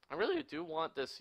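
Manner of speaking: high, cracking, breaking voice. Gameplay YouTuber asking viewers to share videos, voice cracking. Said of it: "Sorry, voice crack".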